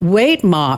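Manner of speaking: said really loudly. Retelling a remark made so a neighbour would hear: imitating saying it really loudly. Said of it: "I said this really loudly".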